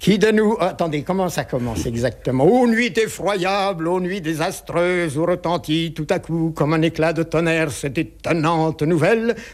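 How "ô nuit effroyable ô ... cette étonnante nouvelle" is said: formal declamation in a Burgundian accent. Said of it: "J'aimerais l'entendre".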